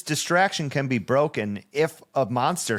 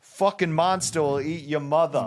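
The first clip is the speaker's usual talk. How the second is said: put-on New Jersey accent, firm and strict; 3 semitones higher than usual. Voicing a mom or similar figure for a bit, in a Jersey-like accent. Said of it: "I feel like we're getting very like, what is that, Jersey?".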